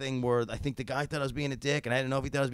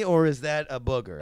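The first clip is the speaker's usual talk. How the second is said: ordinary delivery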